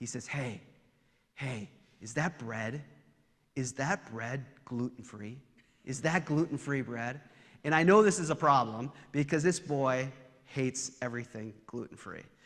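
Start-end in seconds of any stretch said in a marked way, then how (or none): 0.3-7.2 hushed stage whisper. Retelling what a son asked during communion: imitating a stage whisper. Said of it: "he says in a kind of stage whisper".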